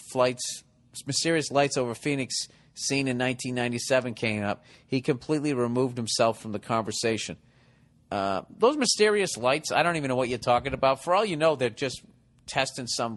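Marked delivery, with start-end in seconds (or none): none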